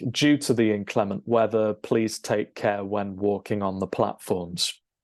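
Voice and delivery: ordinary delivery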